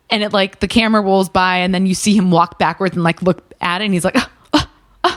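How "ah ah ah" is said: indignant, offended caveman "ah ah ah" noises. Retelling a commercial where a caveman gets offended: imitating an offended caveman. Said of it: "being all upset and, like, so offended".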